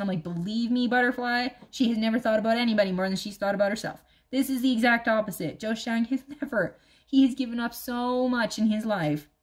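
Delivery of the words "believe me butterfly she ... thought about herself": ordinary talk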